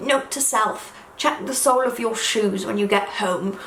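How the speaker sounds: put-on sweet little old man voice. Retelling a man speaking a note into his dictaphone: little old man voice. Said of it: "in his little old man voice he goes".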